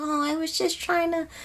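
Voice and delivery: put-on hesitant, faltering girlish voice, very soft and quiet. Describing an audiobook narrator's voice, imitating a hesitant young girl. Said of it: "that little hesitation in their voice".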